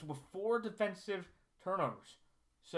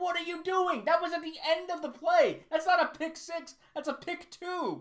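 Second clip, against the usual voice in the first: mock irritated shouting, loud and very high; 10 semitones higher, 6 dB louder than usual. Retelling a play while watching the game: retelling yelling at the TV. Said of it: "I was yelling at my T V going".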